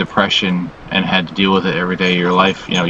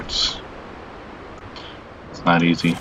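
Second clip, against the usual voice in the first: whispered, hushed voice holding back tears; 8 dB quieter than usual. Describing being sick and dizzy, apologizing while holding back tears. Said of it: "I'm trying not to cry here".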